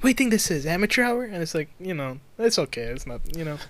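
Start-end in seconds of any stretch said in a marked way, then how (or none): 0.0-1.2 little kitten-like breathy voice, slightly higher. Trying a Mark Wahlberg impression after being asked: breathy Mark Wahlberg impression. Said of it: "a little, like, kitty and, like, breathy".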